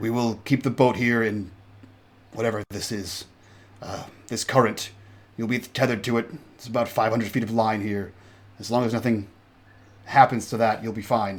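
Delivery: darkly foreboding, ominous tone. Voicing the captain as the group boards the life raft: ominous tone. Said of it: "he says that with kind of an ominous tone".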